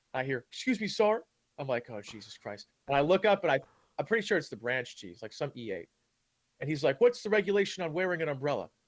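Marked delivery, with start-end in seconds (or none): 7.0-8.6 mock yelling, higher pitch. Retelling how a sergeant stopped him for carrying an umbrella, imitating someone yelling. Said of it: "seeing as you're yelling at me".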